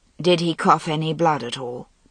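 usual speaking voice

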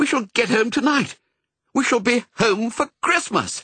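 high, glad, joyful cry. Narrator voicing Pongo calling to Missus, crying out. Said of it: "he cried".

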